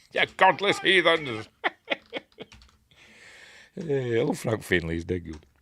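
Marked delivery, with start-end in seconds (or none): 0.1-1.5 put-on pitched-up Irish accent. Acting out Frank Finlay as he comes bursting out, in Frank Finlay's Irish accent. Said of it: "In his Irish accent".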